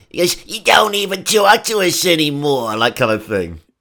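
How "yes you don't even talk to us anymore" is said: put-on high-pitched Brooklyn accent. Speaker discussing a film's raccoons, quoting the raccoon mum: put-on brooklyn accent. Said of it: "kind of a Brooklyn voice".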